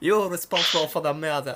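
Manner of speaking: high, bad mock French accent.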